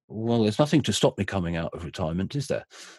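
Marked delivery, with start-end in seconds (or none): none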